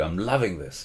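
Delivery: quiet, hushed, murmured stage whisper. Retelling what was said during the film's first minutes: imitating own half-whisper. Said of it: "I whispered to you".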